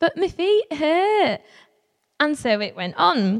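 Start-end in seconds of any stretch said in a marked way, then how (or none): 0.0-1.4 really poor put-on Yorkshire accent, pitched up. Retelling what was said five minutes in: really poor Yorkshire accent. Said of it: "my really poor attempt at a Yorkshire accent".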